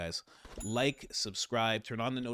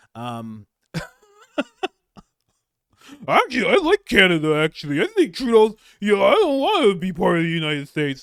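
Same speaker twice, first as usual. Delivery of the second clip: very high, very loud, swooping derisive caricature; 9 semitones higher, 17 dB louder than usual. Mocking guys who embrace communist dictators; mocking impression of these guys. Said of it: "That's what you sound like".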